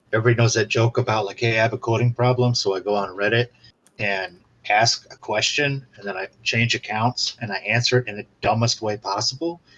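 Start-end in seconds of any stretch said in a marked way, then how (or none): none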